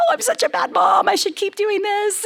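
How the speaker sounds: put-on crying voice. Retelling crying alone in the bathroom after a hard school day: imitating own past crying.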